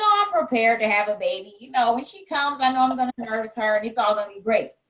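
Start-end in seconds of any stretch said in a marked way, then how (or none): none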